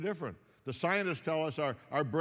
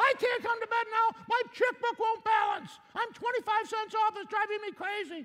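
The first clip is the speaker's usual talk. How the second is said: very high-pitched put-on woman's voice; 3 dB louder than usual. Retelling a bedtime exchange, acting out the woman's reply, imitating a woman's voice. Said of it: "does she really talk like that?".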